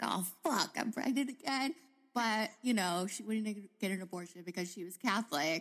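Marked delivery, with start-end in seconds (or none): 0.0-1.7 play-acted, pitched-up, thoroughly fed-up, pissed-off outburst. Retelling how Big Kathy reacted to getting pregnant: imitating Big Kathy super pissed. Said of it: "she was, like, super pissed".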